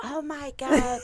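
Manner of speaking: mock very high, stunned, freaked-out exclamation. Retelling telling their mom they joined the Navy, the speaker imitates her freaking out. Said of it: "Like freaked out".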